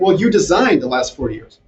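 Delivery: plain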